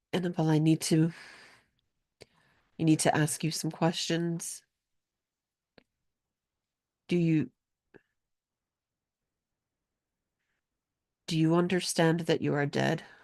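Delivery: soft, choked-up voice catching on the words. Narrating a woman's words as she questions another woman, slightly choked up. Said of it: "she kind of chokes up a little bit and says her name".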